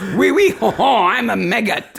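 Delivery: clumsy, badly done put-on French accent. Joking about cheese maggots, voicing a maggot: bad put-on French accent. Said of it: "It was bad no matter what it was".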